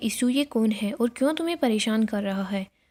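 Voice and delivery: normal talking voice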